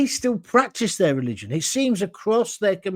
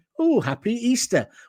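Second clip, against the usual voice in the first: play-acted, openly sarcastic tone; 3 semitones higher than usual. Recounting what she said on hearing the planned topic, retelling a sarcastic remark. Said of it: "she sarcastically turned around and said".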